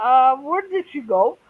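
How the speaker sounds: usual speaking voice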